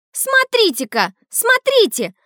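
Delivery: loud high yelling. A boy calls out to the others after a photo is taken, yelling. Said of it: "заорал".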